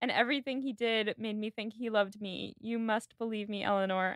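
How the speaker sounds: usual speaking voice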